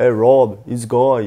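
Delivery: put-on slow, drawn-out, full Australian accent. Showing listeners how an actor's accent is heard in a film: Sam Worthington's Australian accent. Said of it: "il a vraiment l'accent euh, australien".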